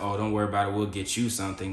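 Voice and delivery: ordinary talk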